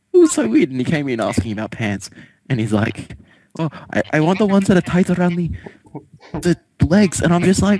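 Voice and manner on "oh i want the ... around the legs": put-on flamboyant Indian accent, pitched much higher.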